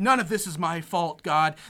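loud angry tone. Retelling a movie scene where a character prays: imitating an angry prayer. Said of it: "he goes and angrily".

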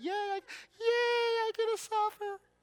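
put-on falsetto, pitched very high. Getting the audience to say it together, in a fake falsetto. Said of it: "that fake falsetto".

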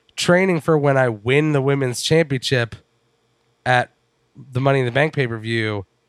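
ordinary delivery

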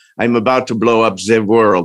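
villainous put-on Dutch accent. Discussing a show, mocking an actor supposed to sound Dutch, imitating his Dutch accent. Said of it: "Supposed to be doing a Dutch accent, but I really felt like at any point he could say".

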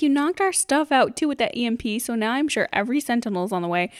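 ordinary delivery

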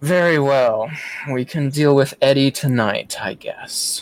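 words sighed out with a long, heavy sigh. Voicing a character who gives in after a long silence, with a long drawn-out sigh. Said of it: "let out a very long, drawn-out sigh".

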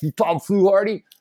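put-on gruff New York accent. Retelling a phone call from a caller: imitating a gruff New Yorker. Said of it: "this gruff New Yorker".

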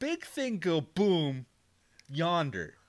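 high, patronizing, condescending, dumbed-down speech. Asked for layman's terms, the doctor explains in a condescending dumbed-down tone. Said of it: "In a less Condescending tone than that".

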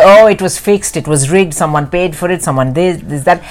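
ordinary talk

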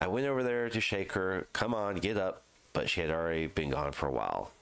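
plain

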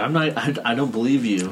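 ordinary talk, nothing marked

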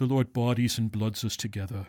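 put-on lecturing professor voice. Speaker tells the group he'll do his best impression of a professor: imitating Professor Nagel. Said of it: "I'm going to give my best Nagel impression".

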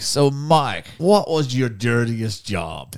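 put-on drawn-out Australian accent. Retelling how Australian radio hosts all questioned Mike, in an Australian accent. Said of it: "the Australian accent".

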